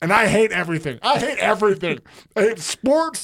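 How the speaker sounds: angry, fed-up rant. Opening the sports show and declaring hatred of sports: sounding mad. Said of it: "Why are you mad?".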